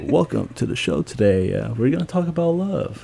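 put-on public radio presenter voice. Retelling how he greeted everyone on the show in his NPR voice. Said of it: "I wanted to use my NPR voice".

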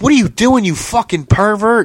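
play-acted high, panicked, freaked-out cry of alarm. Retelling how a woman reacted on catching a man: imitating someone freaking out. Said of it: "she starts freaking out".

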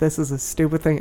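ordinary talk

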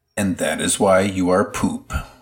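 ordinary talk

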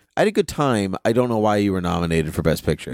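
ordinary talk

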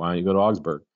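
ordinary delivery

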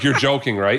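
put-on sarcastic delivery. Retelling own reply to a cashier: imitating own sarcastic tone. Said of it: "I think I was super sarcastic".

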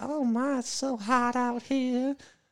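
very high, slow, put-on Southern lady drawl. Retelling what a southern lady said on vacation: imitating a southern lady. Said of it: "I like Southern ladies".

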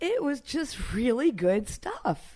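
surprised, taken aback, swooping delivery. Commenting on someone's new work to the other speaker, sounding surprised. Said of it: "You sound surprised".

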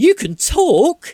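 sudden shriek, very high, very loud. Narrating a game, the speaker voices Sally abruptly interrupting D, Sally screeching. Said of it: "suddenly screeches".

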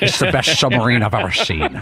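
put-on Scottish accent. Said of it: "he was Sean Connery".

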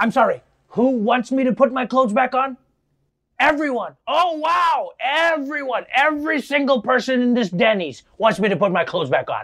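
dry sarcastic delivery. Acting out a reply he imagines coming from Rudy Giuliani, mock-sarcastic Rudy Giuliani bit. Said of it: "uses that sarcastic response a lot".

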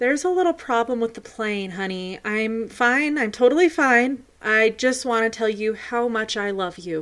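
normal talking voice

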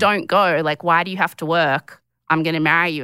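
plain

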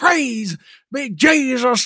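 loud, high, called-out preacher exclamation. Describing a comedy, the speaker quotes the preacher in a Reverend Brown preacher impression.

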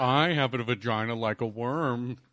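slow, drawn-out rich-gentleman drawl. Riffing a bit, voicing a character: Mister Howell voice. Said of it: "that sounded a little Mister Howell".

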